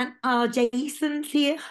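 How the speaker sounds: very loud, very slow, drawn-out put-on Scouse accent. Introducing a guest on the show: put-on Scouse accent. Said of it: "I'm still doing it in a Scouse accent".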